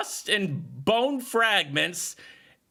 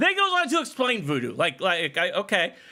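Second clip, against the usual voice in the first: usual speaking voice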